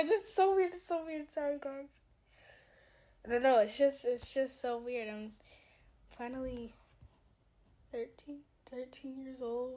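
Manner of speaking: talking through tears. Just turned thirteen, speaking to viewers, crying while talking. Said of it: "you guys have not, like seen me cry before".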